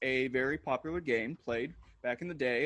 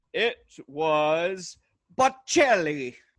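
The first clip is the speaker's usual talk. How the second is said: loud put-on Italian accent, drawn-out "was"; 2 semitones higher, 7 dB louder than usual. Answering the other host's question, saying the word with an accent. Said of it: "to to be less accented".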